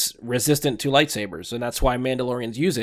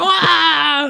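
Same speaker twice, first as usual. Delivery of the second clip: bad, high, loud shrieking lady scream. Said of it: "He literally screams like".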